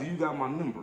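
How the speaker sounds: ordinary delivery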